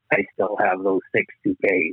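low whisper. Retelling what someone whispered in her ear: imitating someone whispering. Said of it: "he whispers in my ear".

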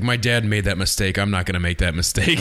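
ordinary delivery

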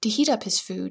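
ordinary delivery

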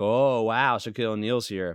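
mock sarcastic delivery. Retelling how two characters react to a claim: imitating a sarcastic reaction. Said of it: "they do it in a sarcastic way".

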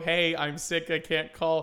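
plain

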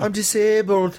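put-on British accent, very high pitch. Describing how Olivia tries a British accent, imitating Olivia's British accent. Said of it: "whenever Olivia tries her British accent".

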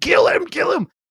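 put-on very high, frenzied screaming cry. Retelling a staking scene where a character screams: imitating someone screaming. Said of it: "Rod's just screaming".

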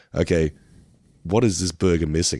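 ordinary talk, nothing marked

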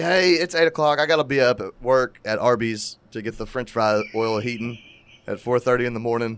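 ordinary delivery

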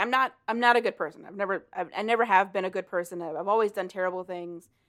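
ordinary talk

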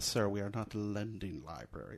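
mock snooty, haughty, stuck-up, superior tone. Retelling a movie scene, quoting the refusal: imitating a snooty voice. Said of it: "Really snooty".

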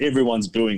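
plain

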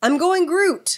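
acted-out shrill, full-throated, very high yell. Retelling what another player yelled in the game: imitating someone yelling. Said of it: "you yelled".

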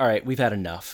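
ordinary delivery

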